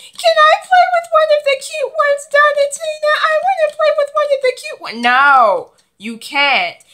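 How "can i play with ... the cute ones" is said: high, loud, fast mocking voice. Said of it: "you keep asking me".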